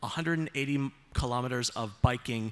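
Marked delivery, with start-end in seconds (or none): none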